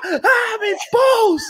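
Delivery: acted cry of agony, pitched way up. Retelling being in the worst pain of his life: re-enacting screaming in pain. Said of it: "I am just screaming".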